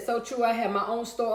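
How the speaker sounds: plain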